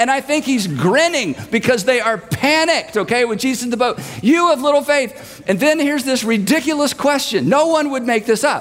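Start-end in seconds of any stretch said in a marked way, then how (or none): 4.2-5.4 shouting in character voice, higher. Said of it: "He's having to yell".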